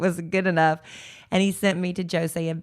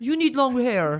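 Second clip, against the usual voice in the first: put-on French accent, pitched higher; 7 semitones higher than usual. Retelling what the hairstylist told them, in a put-on french accent. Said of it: "what am I doing, Russian?".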